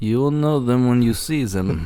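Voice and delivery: put-on German-style accent. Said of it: "You sound like a Borat now".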